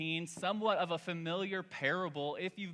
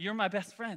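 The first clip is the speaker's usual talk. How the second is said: mock sweet cooing baby talk, higher pitch; 3 semitones higher than usual. Retelling how his wife spoke at her son's naptime: imitating sweet talk to a child. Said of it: "she's talking all sweet to him".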